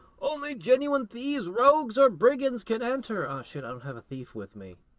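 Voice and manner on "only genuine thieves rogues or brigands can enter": shrill, very high, very loud, muffled shout. Game master voicing someone behind a heavy door, a muffled voice calling out. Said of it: "a muffled voice calls out".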